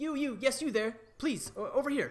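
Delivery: tiny, very high gnome voice calling out. A storyteller voices a gnome calling a passerby over: little gnome voice. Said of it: "a little gnome going".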